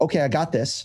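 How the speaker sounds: normal talking voice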